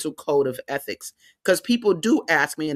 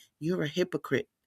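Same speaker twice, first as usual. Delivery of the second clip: put-on whisper, much quieter; 8 dB quieter than usual. Retelling what the daughter said to the speaker on the bus, retelling a whisper. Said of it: "She whispers to me".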